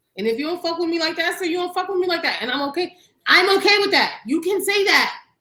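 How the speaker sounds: high, loud, exasperated rant.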